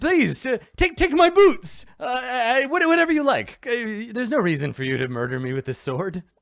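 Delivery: very high, panicked, stumbling, tongue-tied desperate babbling. Player voicing a panicking man offering his boots to escape the sword: panicked, babbling plea. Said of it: "you can see he's panicking".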